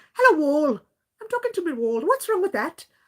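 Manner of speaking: tentative attempted Irish accent. Imitating a woman from a movie who talks to the wall: attempted Irish accent. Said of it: "That's how she tries to speak".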